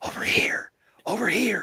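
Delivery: breathy, whispered, lurking alien creature voice. Putting action figures together, the speaker repeats a phrase in a Predator voice. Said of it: "He sounded he sounded like the Predator".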